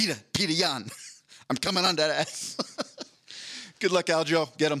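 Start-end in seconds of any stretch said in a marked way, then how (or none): 0.0-2.6 put-on Long Island accent. Repeating what someone said to Peter Jan, in a Long Island accent. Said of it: "it was in the Long Island accent".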